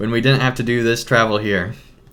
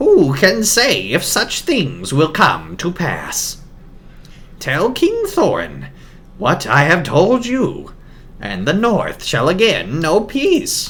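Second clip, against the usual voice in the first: swooping, high, bird-like croaking raven voice; 6 semitones higher than usual. Reading the story aloud, the narrator voices the raven in a raven voice. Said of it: "that Raven voice".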